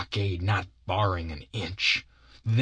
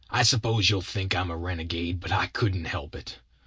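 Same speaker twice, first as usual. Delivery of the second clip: usual speaking voice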